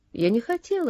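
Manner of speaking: ordinary delivery, nothing marked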